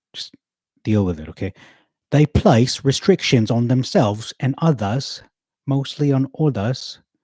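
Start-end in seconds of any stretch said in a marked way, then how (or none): 2.1-6.9 put-on, laid-on, high, very British accent. Repeating a sentence after announcing a switch, in a british accent. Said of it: "I'm going to be very British now".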